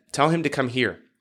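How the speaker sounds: plain reading voice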